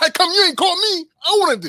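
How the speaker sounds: very high, loud, swooping, aggressive push. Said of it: "he talks so aggressive".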